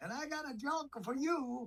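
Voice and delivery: very high, tiny talking dog voice.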